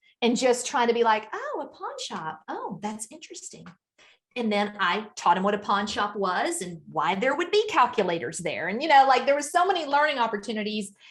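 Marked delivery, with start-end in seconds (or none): 1.3-3.7 hushed, very soft, sing-song, acted unbothered calm interest. Showing how parents react to a child's news: imitating acting calm, not overreacting. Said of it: "trying not to overreact".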